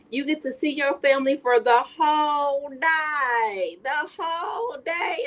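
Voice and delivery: put-on broken Southern accent, drawn-out day. Recalling a scene from The Color Purple, the speaker quotes Miss Millie's broken Southern accent. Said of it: "in that broken Southern accent".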